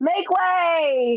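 put-on child voice, long drawn yell. Telling about a boy with his shield and sword: imitating a kid yelling. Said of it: "like she's yelling oh".

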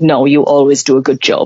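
dreadful put-on Russian accent, low pitch. Quoting a man's reply to her question, in a Russian-accent impression of him. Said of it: "I think I made him Russian".

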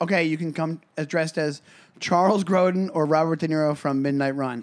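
ordinary talk, nothing marked

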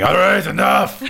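shouting in character. Voicing a pinned werewolf demanding release: shouting in character. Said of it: "you hear a voice saying".

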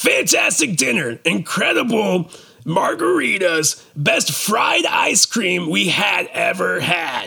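goofy, silly put-on reading voice. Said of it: "good reviews in a funny voice".

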